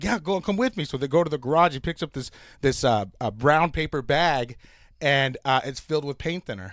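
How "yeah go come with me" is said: put-on Mexican accent, higher and louder.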